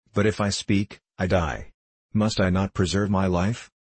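ordinary delivery

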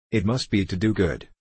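ordinary delivery

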